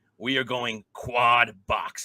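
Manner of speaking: slow, drawn-out call like a broadcaster. Announcing a first for the show: Scott Hanson impression. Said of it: "in my best Scott Hansen impression".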